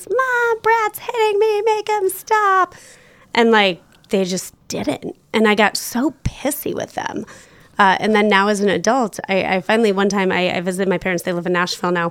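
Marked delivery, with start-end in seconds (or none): 0.1-2.7 very high, drawn-out scream at the top of the lungs. Retelling calling for mom as a kid while brad hit them, retold scream. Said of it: "I would always scream at the top of my lungs".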